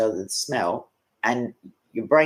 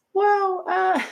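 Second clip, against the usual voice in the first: put-on female voice, higher pitch. Retelling a comedian's bit, imitating Ricky Gervais's female voice. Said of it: "that's his female voice".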